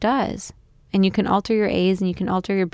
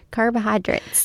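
mocking country bumpkin voice, higher; 3 semitones higher than usual. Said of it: "I don't sound like a country bumpkin".

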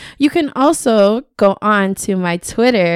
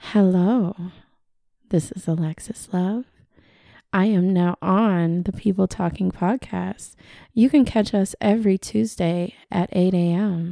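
put-on sultry, seductive sexy voice; 7 dB quieter than usual. Trying out a podcast intro line, in a sexy seductress voice. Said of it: "That was your sexy voice".

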